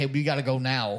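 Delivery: put-on, panicked, pleading tone. Retelling what a woman in the game said: imitating someone panicking. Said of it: "she was panicking".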